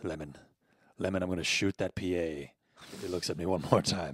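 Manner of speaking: soft, hushed half-whisper under the breath. Answering a request to do an Alec Baldwin: half-whispered Alec Baldwin impression. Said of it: "I just kinda whisper like this".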